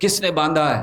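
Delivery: acted-out loud yell. Retelling how Balram shouted to the boys: retelling a loud shout. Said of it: "जोर से चिल्लाए".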